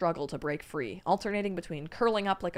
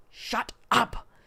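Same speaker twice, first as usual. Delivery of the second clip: hissed in a hushed voice; 5 semitones higher, 4 dB louder than usual. The man pushes up his ghost mask and silences Shelian, in a hissed, hushed voice. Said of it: "he hissed in a hushed voice".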